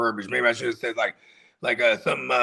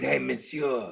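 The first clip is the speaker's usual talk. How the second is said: put-on Cajun French accent, quieter; 5 dB quieter than usual. Imitating how Gambit from the X-Men cartoon greets everyone: Gambit's Cajun accent. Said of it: "he had the little accent".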